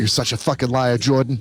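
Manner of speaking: put-on Boston accent, movie-star voice. Talking over a film scene, act out her line to Jordan in a Margot Robbie Boston accent. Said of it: "I could do a Margot Robbie Boston accent".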